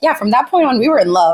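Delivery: normal talking voice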